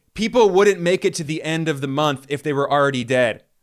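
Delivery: ordinary talk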